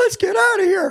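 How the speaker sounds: voice up two octaves.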